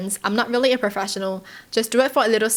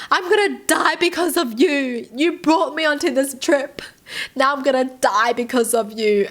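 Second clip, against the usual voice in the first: mock panicked sobbing, higher pitch; 4 semitones higher than usual. Retelling what the girlfriend said to him: imitating someone crying in panic. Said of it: "And she just keeps crying".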